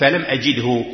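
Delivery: plain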